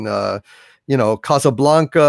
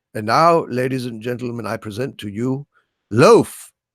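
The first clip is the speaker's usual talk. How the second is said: learned, refined, erudite, lofty presenter tone; 2 semitones lower than usual. Retelling a TV host introducing the musical act: erudite Christopher Lee impression. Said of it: "in his erudite way".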